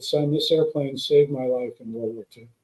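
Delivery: ordinary delivery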